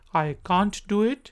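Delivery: can't said in a British English accent. Showing the British pronunciation in an English tutorial: British accent. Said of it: "ब्रिटिश एक्सेंट".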